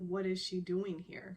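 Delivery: ordinary talk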